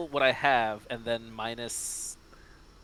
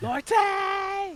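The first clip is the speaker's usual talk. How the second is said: high scream at the top of the lungs. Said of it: "I also wanna scream Lorte at the top of my lungs".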